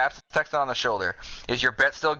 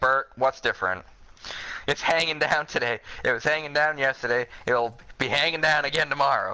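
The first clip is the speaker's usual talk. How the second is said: ordinary delivery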